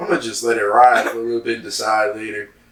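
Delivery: plain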